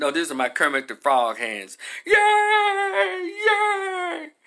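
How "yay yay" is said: mock, very high, gushing, drawn-out crowd cheer. Acting out how everybody reacted to the news: imitating people cheering.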